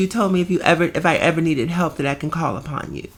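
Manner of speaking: normal talking voice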